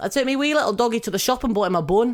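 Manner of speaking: put-on Scottish accent. Asked for a Scottish accent, saying the one sentence a friend taught, in a Scottish accent. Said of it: "I can say one sentence in a Scottish accent".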